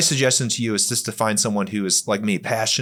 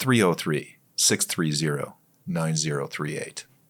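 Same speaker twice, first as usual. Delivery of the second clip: radio announcer voice, much lower; 6 semitones lower, 3 dB quieter than usual. Podcast cohost reading out the call-in number for the other host, in a radio voice. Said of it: "I have a more radio voice".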